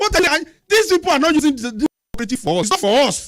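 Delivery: loud, high-pitched shouting. In a group discussion, shouting until another speaker says to stop: shouting. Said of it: "Stop shouting now".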